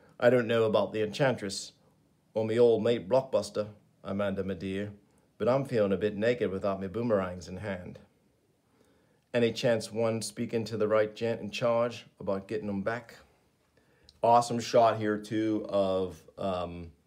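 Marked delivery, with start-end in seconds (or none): 0.2-13.2 put-on Australian accent. Reading a comic aloud as Captain Boomerang: put-on Australian accent. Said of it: "Pardon me for my, uh, Australian accent".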